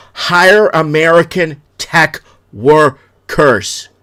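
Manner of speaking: loud, very slow, each word drawn out. Speaking to America, repeating the demand, said as slowly as possible. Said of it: "I'm trying to say it as slow as possible".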